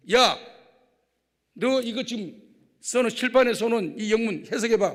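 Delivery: loud, high-pitched, stern, barking teacher voice.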